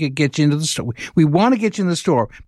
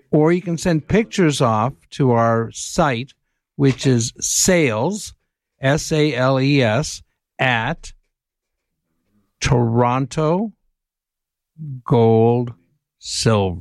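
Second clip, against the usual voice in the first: deliberately slowed down, a little slower; 3 semitones lower than usual. Giving a web address for people to send pictures, saying it slower. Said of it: "I'm trying to say it a little bit slower".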